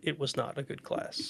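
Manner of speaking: hushed, whispered storyteller narrator voice. Talking about a high school class that went badly, switching to narrator voice. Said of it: "Narrator's voice".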